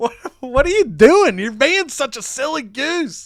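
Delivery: put-on choked-up laughing. Retelling a wrestling match moment, imitating Rey Mysterio choked up and laughing. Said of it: "He's choked up, and he's kinda laughing".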